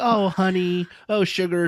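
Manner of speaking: sugary, high-pitched lady voice, very slow and drawn out. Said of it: "I called it her Betty Crocker voice".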